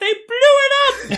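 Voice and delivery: squeaky, tiny, very high chipmunk voice. Quoting what she said at the end of the movie, in a tiny little chipmunk voice. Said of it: "This tiny little chipmunk voice".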